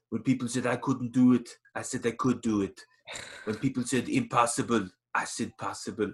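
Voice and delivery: clumsy, bad put-on Austrian accent. Like someone quoting a muscular movie hero's motivational speech in a heavy, gravelly foreign accent, knowing they're getting it wrong. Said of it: "sorry for my bad accent there".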